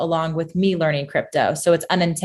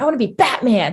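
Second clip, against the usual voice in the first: put-on acted, high, eager little-boy voice bursting with enthusiasm; 7 semitones higher than usual. Retelling a little boy's answer in class: imitating an enthusiastic boy. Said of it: "Said it with so much enthusiasm".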